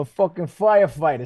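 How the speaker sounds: bad put-on New York accent. Retelling what a group of firefighters behind them said, in a bad New York accent. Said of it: "supposed to be a New York accent?".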